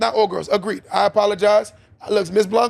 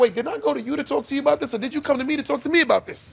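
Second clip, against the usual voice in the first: Spanish-sounding speech, rattled off at breakneck pace; 5 semitones higher, 4 dB quieter than usual. Speaker acting out what a man says to his woman, rapid and Spanish-sounding. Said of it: "I sounded Spanish when I said that so fast".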